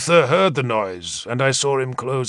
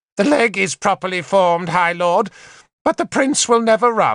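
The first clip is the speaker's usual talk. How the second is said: harsh, pitched-up voice; 7 semitones higher than usual. Narrator reads a character reporting to the High Lord about the prince: harsh voice. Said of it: "Morgan said in a harsh voice".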